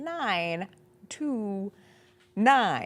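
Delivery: exaggeratedly slow, drawn-out, crawling delivery. Reading out the phone number after being asked to slow down: exaggeratedly slow.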